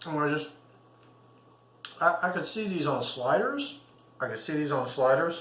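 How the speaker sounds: talking with mouth full. Tasting the food just made and praising it, talking with mouth full. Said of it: "not trying to talk with my mouth full".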